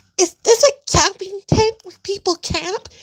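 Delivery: put-on meek small voice. Mocking what a woman asked about a camping tent, in a pathetic little voice. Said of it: "Look at her pathetic little voice".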